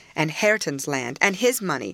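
ordinary delivery

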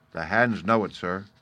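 ordinary delivery

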